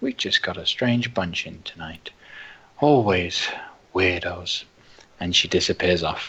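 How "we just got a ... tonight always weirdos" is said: grumbling, muttering under the breath. A game master voices a woman walking off from the players, muttering under her breath. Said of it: "mutters something to herself under her breath".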